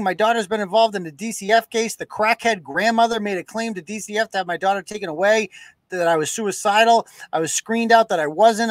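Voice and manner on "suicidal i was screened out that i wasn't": normal talking voice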